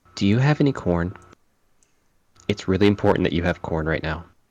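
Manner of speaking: quiet, hushed delivery, pulled right down. A player's character leans in real close to someone; hushed voice. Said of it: "I'll hush my voice down".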